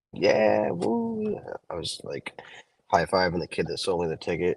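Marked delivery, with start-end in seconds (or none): 0.2-1.4 very high, thrilled, excited whooping cheer. Retelling walking into the store after a big lottery win: imitating own excited cheering. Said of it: "all excited, like, cheering".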